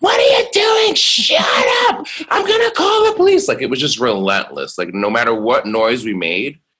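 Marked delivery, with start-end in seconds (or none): 0.0-3.5 very high, loud, shrieking, furious acted scream. Retelling how a woman screamed at their noise during parties in their twenties: imitating someone screaming. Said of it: "she would just be screaming".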